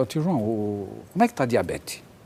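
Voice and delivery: ordinary talk, nothing marked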